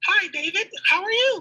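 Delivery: very high-pitched put-on fake female voice. Re-recording a greeting to David for a character: put-on female voice. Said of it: "I want it to be a female voice".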